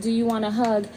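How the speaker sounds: usual speaking voice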